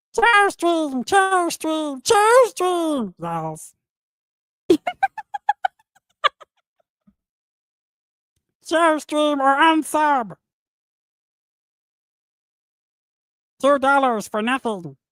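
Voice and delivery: high, swooping cartoon alien voice. Streamer reads out super chats, as suggested, in the Stitch voice. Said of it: "read them in the Stitch voice".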